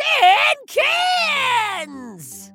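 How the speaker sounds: very high, full-throated yell, "cans" drawn out. Character repeats an answer to a listener who didn't get it, yelling. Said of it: "stop yelling".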